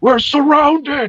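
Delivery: very high, full-volume, alarmed yell. A character yells to alarm everybody who is asleep, yelling at top of voice. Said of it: "I'm going to yell at the top of my voice".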